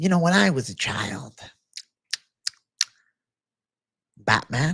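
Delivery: bad, freakish, rough supervillain voice. Trying out a Joker impression after calling it not the best: Joker impression. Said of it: "I sound like a freak".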